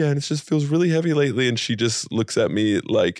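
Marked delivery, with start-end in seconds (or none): 0.0-1.5 put-on tearful weeping, high-pitched, rushed words. Retelling telling the wife about the dream: retelling own crying. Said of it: "I'm crying and I'm like".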